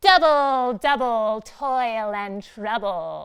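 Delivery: witch voice through the nose. Leading a group in saying a Shakespeare line, nasal witch voice. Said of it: "in our nasal voice".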